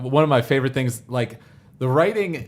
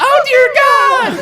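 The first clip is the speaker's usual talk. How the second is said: shrill, very loud, high-pitched shriek; 11 dB louder than usual. Retelling a parody weather report: Sailor Moon voice. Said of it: "Sailor Moon".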